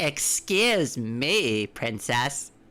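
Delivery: slow, drawn-out sarcastic put-on voice.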